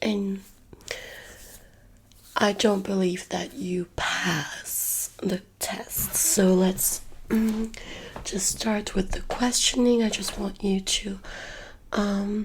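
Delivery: sore, broken, hoarse voice, mostly whispered.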